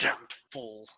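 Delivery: muttered, grumbling under breath. A player's character sighs and turns to look at the others, muttered under breath. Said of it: "Just muttering under my breath".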